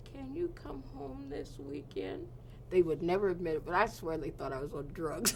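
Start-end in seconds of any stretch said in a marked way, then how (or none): 0.1-2.3 small, pitiful, high and soft voice. Retelling a parent's phone request: imitating a pitiful little voice. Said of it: "in the most pitiful little voice".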